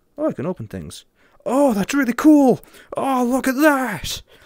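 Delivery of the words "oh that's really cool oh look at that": high, loud excited gushing. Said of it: "Sorry, I got excited there".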